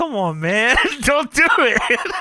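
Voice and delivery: desperate, pleading, begging voice. Recapping a wrestling match, acting out Kurt Angle begging Sting, mock-begging as Kurt Angle. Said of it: "Kurt Angle goes full beg off here".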